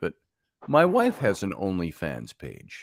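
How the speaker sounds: hushed, confiding, joking stage whisper. Sharing a secret about a spouse with listeners: mock half-whisper. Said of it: "I have to whisper this so the world doesn't hear it".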